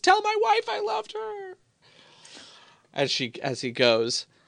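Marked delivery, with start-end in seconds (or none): 0.0-1.5 very high, falling, shrieking scream. Voicing a halfling who screams while falling off a ledge: halfling screaming while falling. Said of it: "a halfling who screams".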